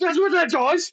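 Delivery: acted frantic freak-out, voice very high. Retelling a player's reaction to learning what the power does: imitating Chris flipping out. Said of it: "Like, flipped out".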